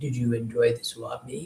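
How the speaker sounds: put-on low, hushed, gravelly boy's voice kept under. Recalling a voice heard from the cable box while watching tv, imitating a gravelly boy's voice. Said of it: "the Gravelly boy said something like".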